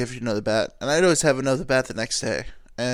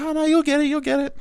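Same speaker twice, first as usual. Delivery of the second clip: very high-pitched, encouraging, reassuring cheering tone. Retelling how dad cheered on kids striking out: imitating encouraging dad. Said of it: "very encouraging".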